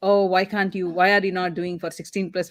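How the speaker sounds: ordinary talk, nothing marked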